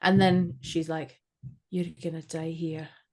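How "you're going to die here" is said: soft, attempted Scottish accent. Retelling what a witch said, in your best Scottish accent. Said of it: "I'm doing that in my best Scottish accent".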